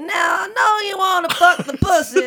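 very high, very loud, shrill put-on voice. Imagining a line from a tour: Bill Cosby impression. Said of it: "I imagine that his tour was gonna consist of him going".

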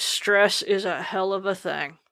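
put-on dry, soft, flat, expressionless deadpan. Retelling what the speaker's doctor said, imitating a deadpan delivery.

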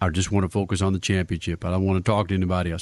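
deep, very low put-on voice. Imitating a driver's typical interview responses to the media; low voice impression. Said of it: "That was kind of a low voice".

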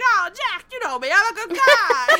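cartoonish, shrill carnival barker, very high, very loud. Retelling how a guy talked to Jack: imitating a carnival barker voice. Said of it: "It was like a carnival barker".

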